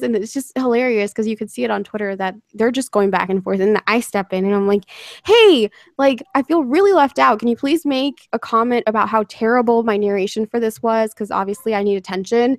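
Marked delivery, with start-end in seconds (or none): none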